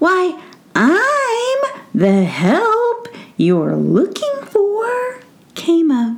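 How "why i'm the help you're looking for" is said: cranky, grouchy tiny voice, very high and slow. Narrator reads an unseen voice near the floor answering Mookie, grouchy little voice. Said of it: "Rather grouchy little voice".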